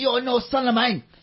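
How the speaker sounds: loud high furious yelling. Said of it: "She's like".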